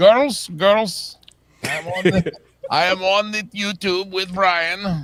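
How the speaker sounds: put-on cartoon voice, pushed very high and cartoonish. Pretending to be a Warner Brothers insider calling in: Gru from Despicable Me voice. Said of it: "I'll try to talk like Gru from Despicable Me".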